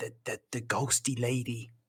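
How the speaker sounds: quiet, leaning-in voice. Retelling what he said while leaning in closer, hushed, not raising his voice. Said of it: "leans in a little closer at this point to try and not like raise his voice".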